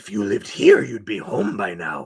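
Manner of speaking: loud, swooping voice, creepy and thrilled. Quoting a favorite horror movie line: creepy excited Pennywise impression.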